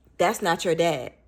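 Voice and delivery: ordinary talk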